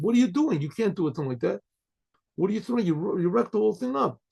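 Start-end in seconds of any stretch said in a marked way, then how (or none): none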